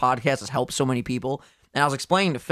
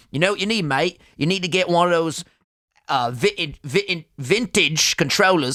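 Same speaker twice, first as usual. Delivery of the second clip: clumsy, bad put-on British accent; 4 semitones higher than usual. Speaker quoting his friend Luke from England giving advice, bad British accent as Luke. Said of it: "I can't do a fucking British accent".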